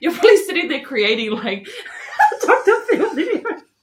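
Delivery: high, loud talk broken up by laughter. Talking about everyone posting TikToks of Renaya, cracking up laughing. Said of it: "I'm cracking up".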